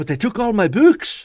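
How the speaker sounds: very high, heavy Irish brogue, pleading. Speaker quotes a remembered line of a man pleading with his boss: thick Irish accent. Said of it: "a thick Irish accent".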